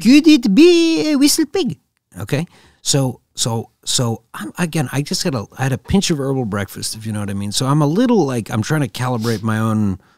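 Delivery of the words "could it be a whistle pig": put-on very high, very loud, thick French accent. Co-host repeating a question quoted in a story, high-pitched thick french accent. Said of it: "thick French accent I've ever heard".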